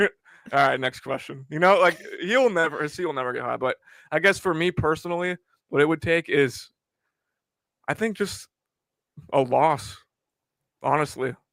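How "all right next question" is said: put-on laughing brush-off, quieter. Retelling how the interviewed coach brushed off a question: imitating Brian Spencer laughing it off. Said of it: "He's laughing it off".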